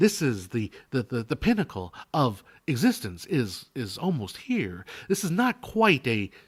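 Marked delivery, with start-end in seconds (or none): 0.0-4.8 put-on TV commercial announcer voice. Putting on the voice of a website's TV ad pitchman: apartments.com commercial voice. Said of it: "It is a homes dot com, apartments dot com".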